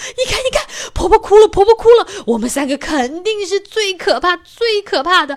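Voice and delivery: abrupt, very loud, high sudden shout. Reading a story aloud, the big bad wolf boasts: shouting suddenly. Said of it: "大野狼这时候突然大叫".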